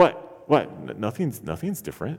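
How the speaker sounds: straight-faced, completely deadpan delivery.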